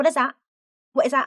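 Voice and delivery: loud aggressive tone. Retelling a woman's questions to a detective: imitating an aggressive demand. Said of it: "just in a really aggressive way".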